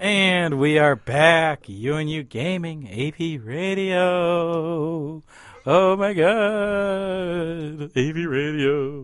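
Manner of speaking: irritating goofy put-on voice, God drawn out. Gaming radio host back from the break, using an annoying voice. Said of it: "Can you stop with that annoying voice?".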